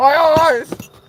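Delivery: high-pitched cartoon screaming. Cooking onions with eyes stinging, imitating the SpongeBob fish: SpongeBob fish yelling. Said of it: "fish in SpongeBob".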